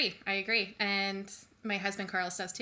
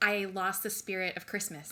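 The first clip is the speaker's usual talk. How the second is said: ordinary talk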